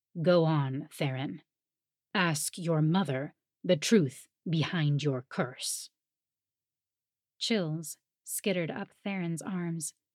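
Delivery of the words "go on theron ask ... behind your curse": icy, cold, low, grave and somber tone. The king, growing somber, addresses theron, cold voice. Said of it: "his voice went cold".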